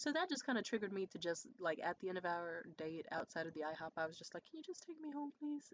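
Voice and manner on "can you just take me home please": saddest little voice, pitched up. Retelling the end of a date outside the IHOP, in the saddest little voice. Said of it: "In like the saddest little voice ever".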